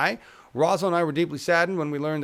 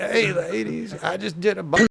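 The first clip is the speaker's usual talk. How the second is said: put-on Southern politician voice, higher; 5 semitones higher than usual. Doing an impression after being asked for Bill Clinton: Bill Clinton impression. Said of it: "do Bill Clinton".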